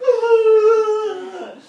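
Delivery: sudden sob breaking into the voice.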